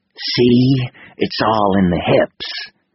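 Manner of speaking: gritted-teeth grunt. A lieutenant demonstrating a bat swing to a beginner, grunting through clenched teeth. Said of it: "he grunted through clenched teeth".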